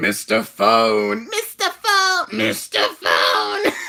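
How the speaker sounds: loud, swooping put-on toilet voice. Trying to pull off a toilet voice: put-on toilet voice. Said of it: "Toilet Voice".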